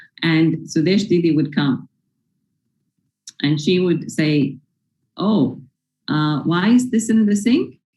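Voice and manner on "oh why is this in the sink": mild, kindly, gentle, sweet tone. Retelling how a senior pointed out something left in the sink: imitating a gentle, sweet voice. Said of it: "Very gently, very sweetly".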